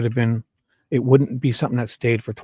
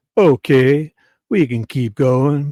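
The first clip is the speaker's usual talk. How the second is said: put-on pretentious small-town voice, louder; 3 semitones higher, 6 dB louder than usual. Reading the prosecution's lines aloud: pretentious small-town McClellan voice. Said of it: "my McClellan voice".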